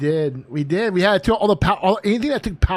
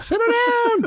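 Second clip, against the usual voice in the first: very high, shrieking puppet-voice yell. Imagining a sock puppet stuck out a hallway: imitating a puppet screaming. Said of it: "the puppet sticking his head out and screaming".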